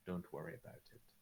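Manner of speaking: grave, dead-serious, completely straight delivery. Voicing a king who looks the player dead in the face: dead serious king. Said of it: "dead in the face and, like, in all seriousness says".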